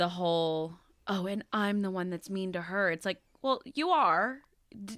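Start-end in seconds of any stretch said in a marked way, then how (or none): none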